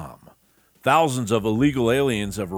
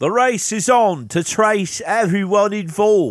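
put-on English accent, very high and louder; 11 semitones higher, 6 dB louder than usual. Reading out a news report, the speaker does their english accent. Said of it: "I'll do my English accent".

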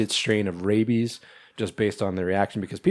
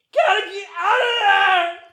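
acted, high-pitched, full-throated screaming yell; 3 dB louder than usual. Describing a character's reaction at the end of a show: imitating someone screaming. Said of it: "He's like screaming".

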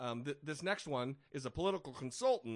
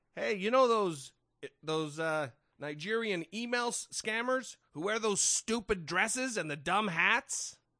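put-on old New York accent, pitched higher; 6 semitones higher, 6 dB louder than usual.

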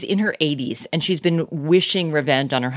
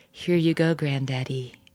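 eerie, creepy put-on voice; 4 dB quieter than usual. Retelling a story where granddaughters serve their grandfather: put-on creepy voice. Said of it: "in this creepy voice".

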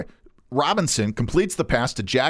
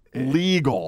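strong stress on the word "legal". Recounting a 1906 american football first to the others: stress on 'legal'. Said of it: "And I stress the word legal".

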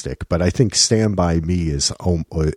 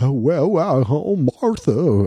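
raised pitch, slow pace; 9 semitones higher than usual. Mocking an actor's wholesome roles with a Jimmy Stewart impression. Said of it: "I can't even impersonate him".

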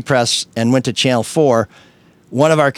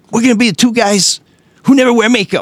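very high, pitched-up voice; 10 semitones higher, 4 dB louder than usual. Retelling what LaDuff once said: LaDuff impression. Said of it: "That was a good impression".

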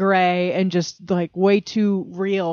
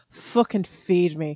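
put-on Scottish accent, cat voice, much slower. Describing how the cat demands food from its owner, in a put-on Scottish accent. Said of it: "he has a Scottish accent".

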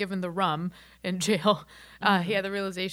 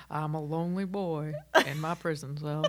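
movie voiceover narrator voice; 3 semitones lower than usual. Joking that Morgan Freeman narrates the next episode: Morgan Freeman narration voice. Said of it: "I can't do the rest of Morgan Freeman".

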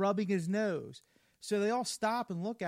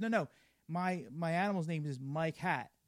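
ordinary talk

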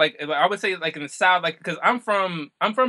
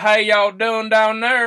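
loud, laid-on put-on Southern American accent; 5 semitones higher, 5 dB louder than usual. Speaker is goaded into a greeting done in a Southern American accent. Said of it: "you're gonna make me start doing the like Southern American".

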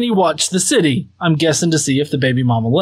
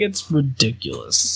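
put-on, sudden serious tone, dropped voice; 4 semitones lower, 6 dB quieter than usual. Imitating the other speaker going serious after laughing: imitating a serious tone. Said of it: "then you go serious".

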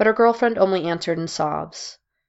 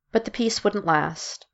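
plain

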